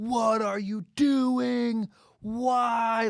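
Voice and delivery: put-on very slow, exasperated hollering, "why" drawn out. Imagining frustrated fans at their tv: imitating fans yelling in frustration. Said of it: "they're just yelling into their T V".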